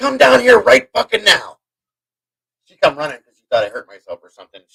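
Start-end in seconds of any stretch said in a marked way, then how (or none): 0.0-1.6 very high-pitched, raw, rough yell. Retelling calling someone down to the kitchen: imitating own yell. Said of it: "And I yelled".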